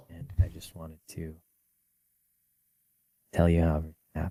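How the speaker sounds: speaking very quietly and softly. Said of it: "you're still gonna have to speak up a little bit".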